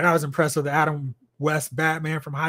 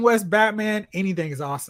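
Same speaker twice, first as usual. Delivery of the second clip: ordinary delivery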